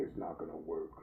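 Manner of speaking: deep, soft, low pronouncing voice. Retelling what the speaker's higher self said, in a deep voice. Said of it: "in this deep voice said".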